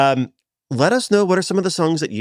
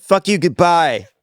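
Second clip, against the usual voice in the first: high, sarcastic, fake-spiteful, mock-hostile delivery; 5 semitones higher, 4 dB louder than usual. Giving the rude goodbye the other speaker expected: pretending to hate sarcastically. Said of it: "I was waiting for".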